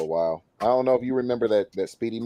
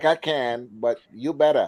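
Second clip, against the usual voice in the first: put-on Ethiopian-accented speech; 4 semitones higher than usual. Retelling what an Ethiopian friend asks: imitating an Ethiopian accent. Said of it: "he's got the accent".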